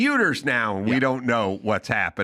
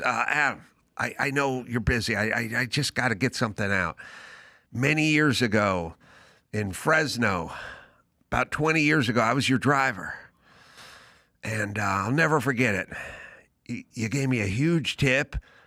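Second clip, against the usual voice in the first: mock nervous, emotional man's voice. Retelling a chauffeur thanking him years later: imitating a nervous, emotional man. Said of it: "you could tell he was getting a little emotional".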